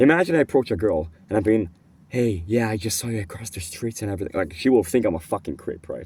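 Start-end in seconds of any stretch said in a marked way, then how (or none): 2.1-4.4 shy, timid, barely audible soft voice. Demonstrating approaching a girl across the street, shy, very low volume. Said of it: "if I talk like this with a very very shy volume, very very low volume".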